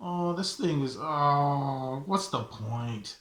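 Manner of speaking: acted hopeless, dejected lament, drawn-out "oh". Retelling looking at a failing report card: imitating his own past dejected self. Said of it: "I was just kinda looking at it like".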